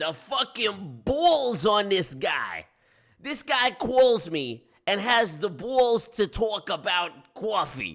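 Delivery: put-on over-the-top New York accent. Ranting about a man who berated the speaker at work, in an exaggerated New York accent. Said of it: "I'm just using all the New York sounds I can use".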